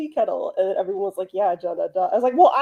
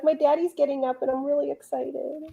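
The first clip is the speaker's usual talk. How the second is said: high, thrilled, eager, excited put-on voice; 5 semitones higher, 5 dB quieter than usual. Speaking for her as her daddy gets up: put-on excited voice. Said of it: "She's so excited".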